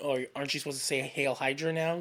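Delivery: plain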